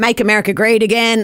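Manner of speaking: terrible, quick American accent.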